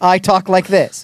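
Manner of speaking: ordinary talk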